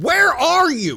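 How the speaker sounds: full-volume, very loud, shrill yell, very high.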